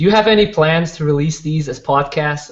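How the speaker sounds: imitated American accent. Asking the next question a few people have asked, American accent. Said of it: "I'm going to ask you guys the next question in American accent".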